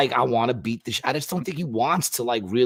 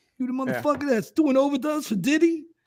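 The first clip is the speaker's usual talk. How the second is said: very high-pitched, confrontational voice; 14 semitones higher than usual. Acting out an officer arresting the speaker: sounding like Mike Tyson. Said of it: "That was Mike Tyson".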